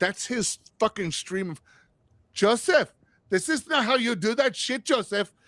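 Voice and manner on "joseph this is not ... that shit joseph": put-on mimicked Filipino accent, spoken at a higher pitch. Imitating a comedian's Filipino mom scolding him: imitating Jo Koy's Filipino mom. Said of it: "When he does that, that's how he's hear it".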